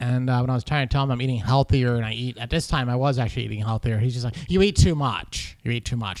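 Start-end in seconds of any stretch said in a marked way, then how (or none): 4.5-6.2 showy, flamboyant way of talking. The speaker quotes her doctor from a visit, imitating Dr. B's way of talking. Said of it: "is that how the doctor talks?".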